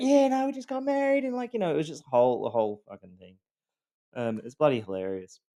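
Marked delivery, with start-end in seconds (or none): 0.0-1.7 very high, bright, chipper put-on cheer. Retelling the ex-wife talking to a stewardess: imitating someone chipper.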